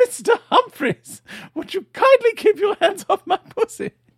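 very high, full-throated, shrill acted-out scream. Retelling a sitcom's final scene: imitating Mrs Slocum screaming. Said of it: "Missus Slocum screaming at the top of her lungs".

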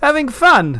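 cheery, bright, very high-pitched voice. At a masked party, a man asks a guest a question brightly. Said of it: "Arthur asked brightly".

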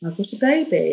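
ordinary delivery

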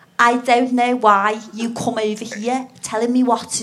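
put-on Liverpool Scouse accent. After offering to try one, speaker delivers a line in a Scouse accent. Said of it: "Shall I try and do Scouse?".

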